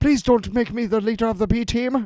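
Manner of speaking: put-on jittery German accent. Describing a film character, imitating Willem Dafoe's neurotic German character. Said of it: "he's a super neurotic, like, German guy. I'm like".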